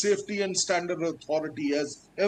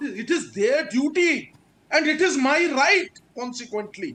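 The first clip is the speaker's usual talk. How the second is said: very loud, raised, high-pitched, insistent voice; 6 semitones higher, 3 dB louder than usual. Arguing that consumers have a right, speaking very loudly. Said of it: "I'm being very, very loud also".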